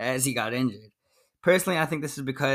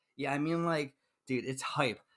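normal talking voice

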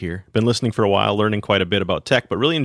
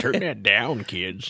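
put-on old man voice; 6 dB quieter than usual. Recalling something too loud, retelling his own remark in a mock old-man voice. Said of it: "You sound like an old man".

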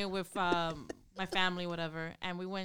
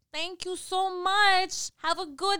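put-on Staten Island accent; 11 semitones higher, 6 dB louder than usual. A woman crossing the street thanks someone who let her go ahead, imitating a really strong Staten Island accent. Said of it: "it's the Staten Island accent".

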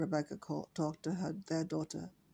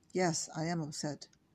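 ordinary delivery

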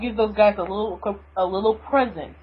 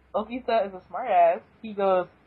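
ordinary talk

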